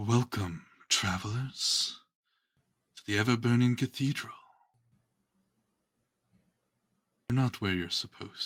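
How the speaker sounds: female voice echoing, ringing as if inside a helmet. Narrator voices a helmed figure greeting travelers, echoing female voice from helm. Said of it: "you hear a female voice echo out from inside the helm".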